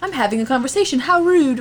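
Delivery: put-on English accent. Picturing a man in an urban legend story, in a british accent. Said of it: "In the little mustache and a British accent".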